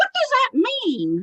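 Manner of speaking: put-on very high-pitched, baffled, confused small-child voice. Retelling a medium's question about a phrase: imitating a confused child's voice. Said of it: "he's almost talking like a little child that doesn't understand".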